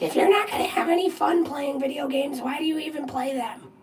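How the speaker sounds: very high, fed-up, scolding yell. Retelling how mom yelled about video games: imitating mom yelling. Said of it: "My mom used to yell at me".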